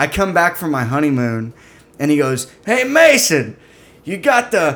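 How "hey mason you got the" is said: heavy, thick Boston drawl, slow and high. Retelling what an older coworker from Revere said: imitating a thick Boston accent. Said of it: "a guy that's in a movie that does the accent".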